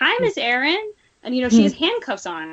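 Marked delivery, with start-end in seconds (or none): 0.0-0.9 put-on very high, tiny, childlike little girl voice. Retelling how a handcuffed interviewee greeted you: little girl voice. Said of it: "in this little girl voice".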